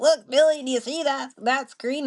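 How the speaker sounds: put-on old hillbilly accent, high-pitched. Retelling a YouTube video, the speaker voices a woman in it: old hillbilly voice. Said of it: "they sound like these kind of old hillbillies".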